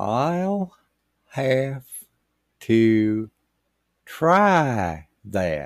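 slow, drawn-out words with pauses. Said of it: "That was in Russian".

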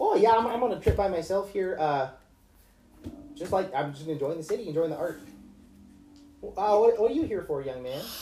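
put-on high-pitched elderly lady voice. Voicing an old lady traveling alone, chatting with a stranger: old lady character voice. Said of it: "she mostly wants to talk about art".

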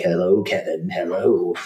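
acted spooky, creepy calling-out voice. Acting out a man going door to door trying to scare an 11-year-old, creepy voice. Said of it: "in his creepy voice".

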